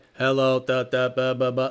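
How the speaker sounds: very low, flat, monotone robotic machine voice. Showing how the AI does not sound, in a robotic voice. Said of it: "It's not robotic. It's not like".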